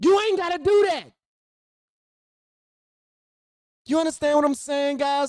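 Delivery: insistent, hammering rant. Ranting to the viewers about blame after a killing: yelling at the audience. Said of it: "I apologize for yelling in y'all ear".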